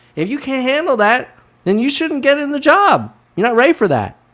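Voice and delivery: fed-up ranting. Ranting to listeners, getting angry. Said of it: "I'm getting pissed".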